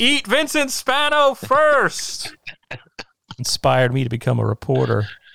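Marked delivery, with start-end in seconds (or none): 0.0-2.3 very high, very slow, drawn-out yell. Retelling a moviegoer who stood up in the theater: imitating someone screaming. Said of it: "got up and screamed".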